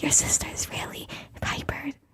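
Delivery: very soft whisper. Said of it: "Karen whispered next to me".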